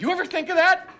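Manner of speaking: very high, very loud, furious shout. Mid-argument, a man throws a question back at her, angry yelling. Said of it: "Harvey, you're yelling".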